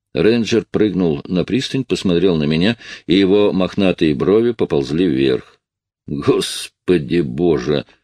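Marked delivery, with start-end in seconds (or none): 6.1-7.9 disgusted mutter, much lower pitch. A ranger jumps onto the pier and sees the narrator again; disgusted mutter. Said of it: "с отвращением пробормотал он".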